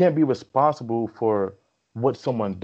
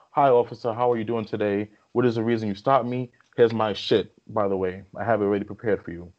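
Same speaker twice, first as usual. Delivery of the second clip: mock overly courteous, sweet-as-pie, extra polite tone. Retelling getting pulled over, the speaker talks to the officer acting as polite as possible. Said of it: "talking to that officer in the nicest manner possible".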